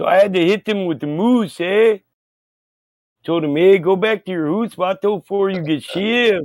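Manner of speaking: put-on Mexican Canadian accent. Improvising a character bit for the others, in a Mexican Canadian accent. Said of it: "That's a Mexican Canadian right there".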